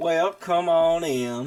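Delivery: put-on country accent. Voicing a character in the campaign, the speaker uses a country accent. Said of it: "Cinder's definitely taken aback by by the uh, accent".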